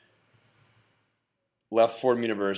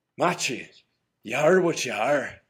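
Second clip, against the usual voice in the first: higher-pitched Irish brogue. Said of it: "in his Irish brogue".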